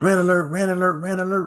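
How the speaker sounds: high-pitched, birdlike call. A channel host tries a rant-alert sound for the pet peeve section: birdlike call. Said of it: "It came out sounding like a bird".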